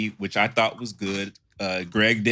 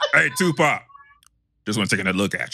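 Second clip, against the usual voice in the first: very deep low voice with swooping pitch. Joking about Brandon's deep voice, doing a deep-voiced Suge Knight impression. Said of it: "Brandon using that deep ass voice".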